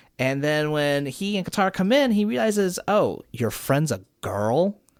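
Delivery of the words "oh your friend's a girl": mock, sniffy, scornful, disdainful, dismissive tone. Retelling a scene where Master Pakku sees the friend: imitating Pakku's disdain. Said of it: "he kinda says it with some disdain".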